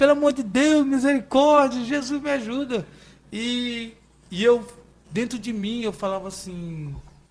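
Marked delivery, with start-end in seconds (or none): 0.0-2.8 put-on loud pleading screaming cry, woman's voice. Retelling a woman's plea while a man chased her: imitating a woman screaming. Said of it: "e a mulher gritando".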